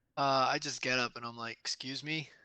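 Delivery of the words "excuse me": intimidating, threatening tone. Standing up to the half-orc in a game: intimidating. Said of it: "attempt to make an intimidation check".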